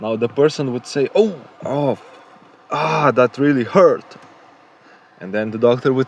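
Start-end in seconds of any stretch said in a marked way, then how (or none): 1.1-4.2 slow cry out in pain. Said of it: "start yelling a little bit more".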